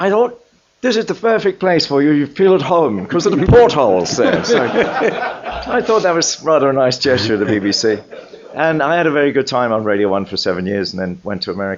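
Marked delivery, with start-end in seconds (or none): 0.0-4.4 British broadcaster chap's voice, high and loud. Retelling a BBC man's words at a lunch meeting: imitating his way of talking. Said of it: "a chap with a moustache who talked like this".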